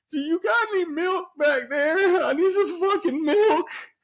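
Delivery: put-on crying, very high-pitched, weepy and tearful. Retelling asking a bartender for milk after hot sauce: imitating own crying plea. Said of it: "I'm crying, dude".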